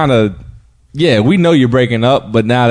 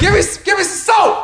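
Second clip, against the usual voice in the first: put-on distant-sounding yell, higher pitch. Imitating a drop that sounded yelled from a bathroom: imitating Kevin Hart yelling from a bathroom. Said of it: "sounded like he said it from the bathroom".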